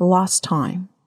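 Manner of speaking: British English "last", ah vowel like in "lost". Showing learners how to say last time in a British accent. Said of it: "我们用英国腔来念看看的话".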